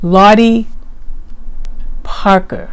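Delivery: name said slowly, each syllable deliberate. Repeating a name so it comes out right, name said slowly and carefully. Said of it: "let me say her name again a little bit slower".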